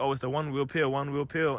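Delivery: ordinary delivery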